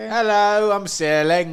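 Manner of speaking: shrill, very loud, high put-on English accent. Voicing a person named Ceiling who is from Britain: British accent. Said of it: "he's from Britain".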